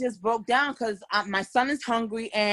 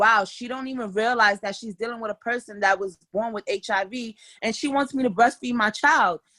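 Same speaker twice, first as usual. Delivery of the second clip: normal talking voice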